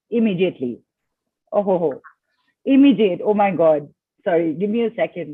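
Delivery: choked-up, catching voice, lump-in-the-throat emotion. Reacting right after counting backwards from eight to zero: choked up with emotion. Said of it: "lump in my throat".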